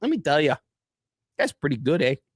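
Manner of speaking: put-on Canadian accent ending on "eh". Joking in a mock sports update: put-on Canadian accent. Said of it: "Now it's Canadian".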